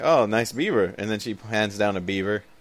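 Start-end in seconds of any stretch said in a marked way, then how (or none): none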